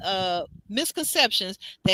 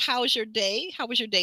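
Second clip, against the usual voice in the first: mock, very cheery man's voice. Retelling a late phone call, speaker does Bernardo in a very cheery voice. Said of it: "he's in a very cheery voice".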